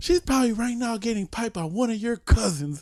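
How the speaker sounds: put-on angry ranting. Retelling a drill instructor berating a recruit: imitating someone going off angrily. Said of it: "he just fucking going off on this fool".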